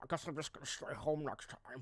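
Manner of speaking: muffled mumble, like talking through a full mouth. Quoting Albert and showing how he sounds when he talks: an Albert impression, like his mouth is full. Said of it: "that's how he sounds when he talks".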